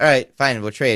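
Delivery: ordinary delivery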